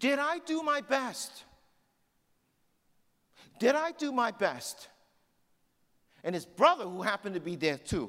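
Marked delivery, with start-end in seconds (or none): 0.0-4.9 exhausted, delirious, high, drawn-out yell. Retelling what an exhausted, delirious man yelled out, imitating him shouting. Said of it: "this is what he yelled out".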